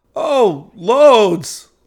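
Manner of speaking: mock breathless sarcastic gasp. Answering the tech's question while barely able to breathe, gasping, sarcastic. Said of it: "I say, gasping".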